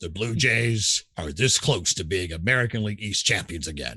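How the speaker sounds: subdued, low, documentary-style promo voice. Broadcaster demonstrating how he voiced a blue jays broadcast opening, lowered promo voice. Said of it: "tone that down more like".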